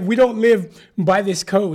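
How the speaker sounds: put-on loud, high, heavy Nigerian accent. Retelling a woman's words from childhood, in a strong nigerian accent. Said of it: "in her like strong Nigerian accent".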